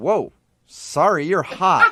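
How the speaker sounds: very slow, dazed, stunned, blank delivery. Retelling how the angry driver suddenly stopped: imitating a stunned man. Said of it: "like a deer in headlights".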